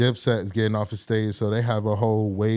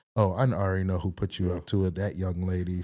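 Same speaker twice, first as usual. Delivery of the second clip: playful voice; 3 semitones lower, 4 dB quieter than usual. Retelling what the security guard said after everyone laughed: imitating a playful tone. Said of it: "went from serious to playful".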